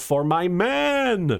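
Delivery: mock high yell, man stretched out. Retelling the other speaker's line in a movie: imitating a yell. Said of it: "you yell".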